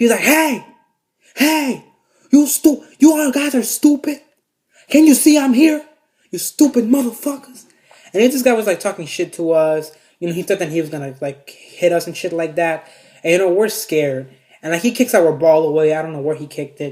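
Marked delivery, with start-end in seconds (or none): 0.2-7.6 put-on very high, loud, drawn-out furious angry yell. Retelling how the man their ball hit reacted to them: imitating an angry man. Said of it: "he literally just gets so pissed".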